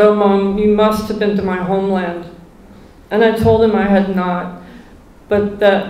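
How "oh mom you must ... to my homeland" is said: ordinary delivery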